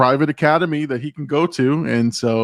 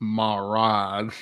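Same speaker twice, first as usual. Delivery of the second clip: put-on southern drawl, lower and quieter; 3 semitones lower, 7 dB quieter than usual. Repeating a movie character's line: imitating a southern drawl. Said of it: "Keep that southern drawl when you say it".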